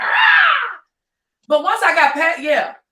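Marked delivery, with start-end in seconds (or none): 0.0-0.8 furious, frustrated, angry yell. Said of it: "angry I was, sliding stuff off the dresser like".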